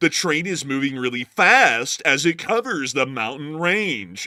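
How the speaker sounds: slow, loud documentary narrator voice. Mocking train documentaries, doing a Smithsonian documentary narrator voice. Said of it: "why are you talking like that".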